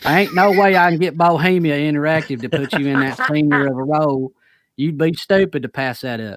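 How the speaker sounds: put-on spot-on Kentucky accent. Reading a quoted reply from Hicks aloud, in a Kentucky accent as Hicks. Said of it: "I said spot on with the accent".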